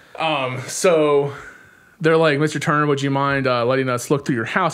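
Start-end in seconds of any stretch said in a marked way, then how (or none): none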